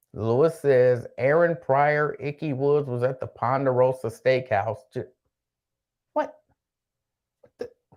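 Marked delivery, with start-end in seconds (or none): none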